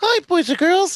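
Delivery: very high cartoon mouse voice with Puerto Rican accent. Suggesting someone work for Disney, greet the boys and girls in a Puerto Rican Mickey Mouse voice. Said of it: "Puerto Rican Mickey Mouse".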